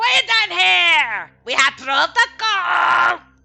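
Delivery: acted goblin character voice. Voicing a goblin scolding the party for not ringing the gong: goblin character voice. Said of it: "But he's like".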